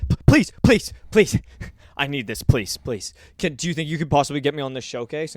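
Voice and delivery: put-on desperate begging. Retelling how people beg to get on a showcase: imitating desperate pleading. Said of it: "they just get so desperate and are like".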